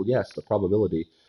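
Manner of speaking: put-on British English accent. Speaker imagines how a scientist would sound talking, British accent. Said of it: "but like in a British accent".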